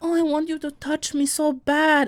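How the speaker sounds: put-on Colombian accent on English words. Retelling a dancer's dirty talk in a little colombian accent. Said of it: "when you did the accent".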